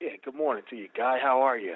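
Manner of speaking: sounding low. Greeting the host as a caller to the show: sounding low. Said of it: "You sound kinda low".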